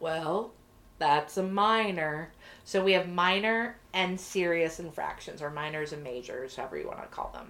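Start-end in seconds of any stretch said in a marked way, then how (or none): 0.0-2.3 very deep, low voice, very slow and deliberate. Retelling Richards's answer in a conversation about an infraction, in a Richards impression, really low, deep, slow. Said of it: "he talked in this really low, deep voice, slow".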